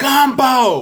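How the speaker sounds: very high-pitched, loud shouting yell. Recalling yelling an answer at the screen while decompressing, retelling a yell at the screen. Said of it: "but I'm yelling at my screen".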